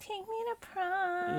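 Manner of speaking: very nasal, high, slow, drawn-out pleading tone. Retelling a movie scene where Ashley begs him to take her to prom, nasally Ashley voice. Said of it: "In a very nasally voice".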